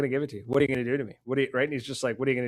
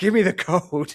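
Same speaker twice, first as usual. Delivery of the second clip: high, screamed, acted-out, demanding tone; 6 semitones higher, 6 dB louder than usual. Retelling how she pinned a man down and demanded the code: retelling someone screaming. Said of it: "and screams".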